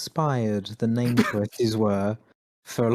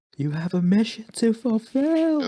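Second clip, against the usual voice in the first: put-on restrained shout, very high, rising; 11 semitones higher than usual. Recalling Troy shouting to Robo Knight; imitating a hushed shout. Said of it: "I'm shouting, but I'm also trying not to wake a baby voice".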